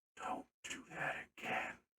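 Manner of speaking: soft, unvoiced whispering voice.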